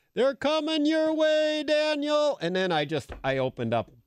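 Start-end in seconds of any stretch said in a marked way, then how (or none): 0.2-2.4 acted, very high, carrying holler. Retelling a first deer hunt, quoting dad on the ridge: imitating someone yelling. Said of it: "he's yelling".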